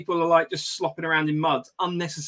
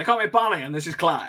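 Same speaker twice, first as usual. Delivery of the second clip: put-on cartoon rooster voice. Introducing themselves as Bonnie and Clyde: Foghorn Leghorn voice. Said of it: "why you sound like Foghorn Leghorn".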